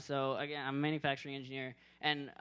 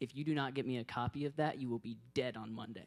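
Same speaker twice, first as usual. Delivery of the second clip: put-on, deadpan, dead-serious tone; 2 semitones lower, 3 dB quieter than usual. Retelling what the guy at his desk said: imitating a dead-serious remark. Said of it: "in the most serious way possible".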